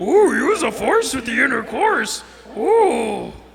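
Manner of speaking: put-on slow old-master sage voice, every word drawn out. Doing voices during sex: Yoda voice. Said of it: "I start talking like Yoda".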